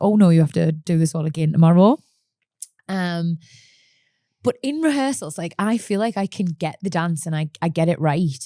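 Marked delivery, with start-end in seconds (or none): 0.0-2.0 put-on sudden dread in a raised inner voice. Retelling sunday when the fear comes back, retelling own past fear. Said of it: "the fear comes back because I'm like".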